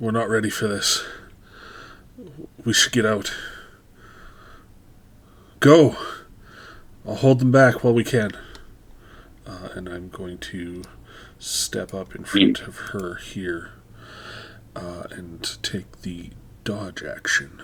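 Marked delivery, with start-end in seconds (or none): 0.0-8.3 very loud, fast, authoritative commanding call. A player speaks in character to everyone in the group, commanding voice. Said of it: "in a sort of commanding voice".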